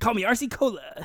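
weird, high morning radio DJ voice. Arguing over a self-given nickname, the speaker insists in a morning zoo DJ voice. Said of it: "I have a weird like morning zoo DJ voice going on".

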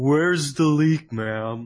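big, loud cartoon starfish voice. Showing a favourite voice to do: Patrick voice.

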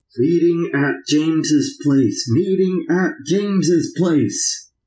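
eerie, portentous, foreboding intoning voice. Breaking into the group's talk with an ominous voice. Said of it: "that ominous voice seemed to say".

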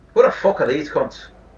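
put-on tough-sounding Irish accent. An actor delivers Jack's scripted line in rehearsal, Irish accent. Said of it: "why are you Irish".

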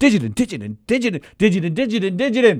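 passionate, emphatic, insistent repetition. Telling the listener about a sound they kept making, imitating it emphatically. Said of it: "and you were like emphatic".

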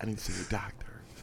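very quiet whisper, barely voiced. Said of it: "you need to really stop whispering".

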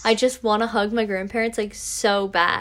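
usual speaking voice

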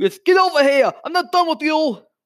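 put-on thick New York accent. Speaker describing a character, doing Raven's thick New York accent. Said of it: "has a thick, like, New York accent? Like this".

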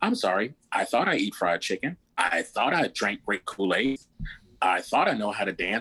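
a little sarcastic, lightly mocking tone. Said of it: "I might be a little sarcastic".

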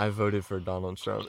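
acted-out whisper. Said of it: "whispering to her".

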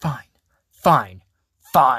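mock all-out furious outburst, very loud. Describing a scene where she yells at her publicist, imitating super angry yelling. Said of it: "she gets super angry with the publicist".

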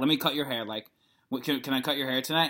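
mock confident-sounding voice. Retelling Emily's eager offer to cut hair: imitating Emily sounding confident. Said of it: "she's so confident all week".

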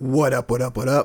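rough, rasping, hoarse voice. Greeting the others right after an introduction: raspy voice. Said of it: "Raspy voice".

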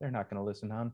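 barely audible half-whisper. Retelling what a woman walked up and said: imitating a half-whisper. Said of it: "just whispered to me".

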